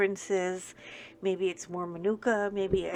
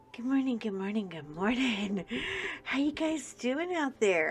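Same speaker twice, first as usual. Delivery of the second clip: hushed, soft, early-morning voice; 4 semitones higher than usual. Greeting viewers very early in the morning, talking softly. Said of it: "I'm talking softly because it's very early in the morning".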